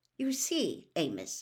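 ordinary delivery, nothing marked

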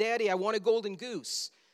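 insistent, demanding yell in put-on girl voice. Retelling a movie scene where Veruca yells to her father: imitating Veruca yelling. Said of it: "she yells out".

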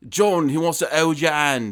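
put-on British accent.

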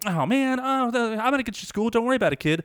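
carefree, bubbly, very high cheerful chirp. Retelling a woman reassuring an upset kid: imitating a bubbly voice. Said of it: "She's like bubbly".

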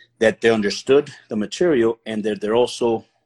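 usual speaking voice

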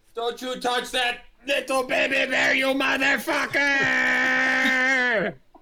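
angry shouting in a character voice. Running at an enemy in the game: yelling in character. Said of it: "I'm going to yell".

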